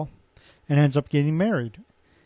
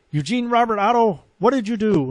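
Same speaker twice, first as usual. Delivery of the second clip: mock loud scolding call-out; 6 semitones higher than usual. Retelling a mother scolding her son: imitating a mother yelling. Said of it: "She would yell out".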